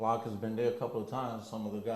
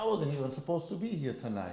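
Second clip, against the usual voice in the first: mock angry voice, higher pitch; 5 semitones higher than usual. Retelling what was said to the guy arguing at the door: retelling own angry words. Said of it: "He's getting mad now".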